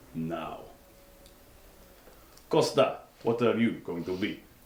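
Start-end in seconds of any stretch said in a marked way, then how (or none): 2.5-4.4 put-on Russian accent. Starting a round of putting on accents with the group, put-on Russian accent. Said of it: "(in Russian accent)".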